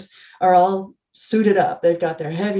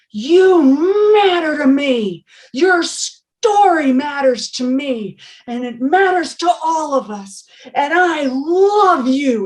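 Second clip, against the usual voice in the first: put-on loud, very slow drawn-out yell; 8 semitones higher, 5 dB louder than usual. Retelling a person yelling at somebody across the room: imitating someone yelling. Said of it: "he's yelling at somebody across the room".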